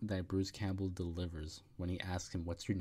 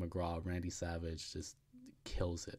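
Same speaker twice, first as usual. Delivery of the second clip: ordinary delivery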